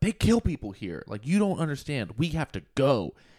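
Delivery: woman screaming, high-pitched. Retelling a movie scene where a woman screams at him: imitating a woman screaming. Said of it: "this woman screaming at him".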